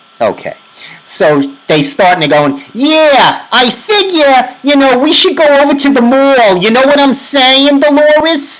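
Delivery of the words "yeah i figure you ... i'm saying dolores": mocking Long Island accent, pitched higher. Retelling a movie's dialogue: imitating a fake Long Island accent. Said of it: "they're trying to emulate a Long Island accent".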